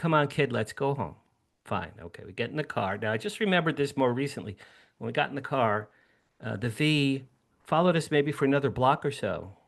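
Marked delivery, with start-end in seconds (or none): 0.0-1.2 calm, put-on voice. Retelling his father's reply after watching the UFO: imitating father's calm voice. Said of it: "he looks at me very calmly and goes".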